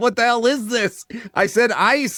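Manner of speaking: put-on irritated, high-pitched Mexican accent. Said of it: "has an accent".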